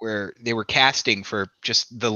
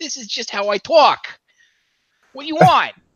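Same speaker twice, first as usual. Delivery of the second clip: very high, loud, sassy put-on accent; 14 semitones higher, 5 dB louder than usual. Quoting a film character who gives him shit: Woody Allen voice. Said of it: "Did you just channel Woody Allen?".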